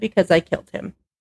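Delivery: normal talking voice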